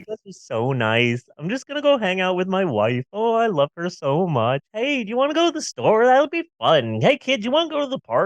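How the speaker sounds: euphoric, happy-go-lucky voice. Showing how the bliss pills make the speaker feel: put-on happy high voice. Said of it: "just a sort of like".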